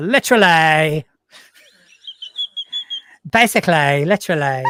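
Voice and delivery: sing-song Essex accent, swooping hard on -ly endings. Asked to show an essex accent, the speaker demonstrates it, leaning on -ly endings. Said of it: "lean on the words that end in ly".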